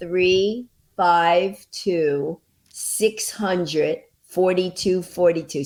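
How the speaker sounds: very slow, deliberate, each digit measured out. Giving the ticket phone number for the show, talking slowly. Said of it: "I can talk slow if I have to".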